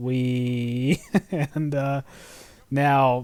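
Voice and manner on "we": mock-unenthusiastic flat tone. Describing driving past workers on a vehicle, in a put-on unenthusiastic tone. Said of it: "with that same unenthusiastic tone".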